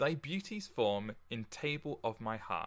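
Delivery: ordinary delivery, nothing marked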